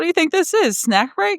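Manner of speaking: lighthearted, very high-pitched, joking teasing tone. Recalling eating something, quoting their coach: imitating coach's joking tease. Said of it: "she was so joking".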